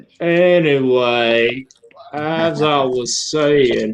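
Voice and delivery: very slow, drawn-out Southern drawl.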